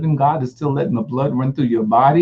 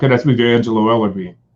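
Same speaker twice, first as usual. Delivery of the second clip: real deep, low voice, dropped way down; 4 semitones lower than usual. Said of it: "real deep voice".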